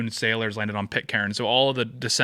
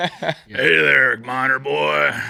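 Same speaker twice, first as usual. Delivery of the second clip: very slow, rough, raspy, drawn-out smoker's voice; 4 semitones higher, 6 dB louder than usual. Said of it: "They got a cigarette voice".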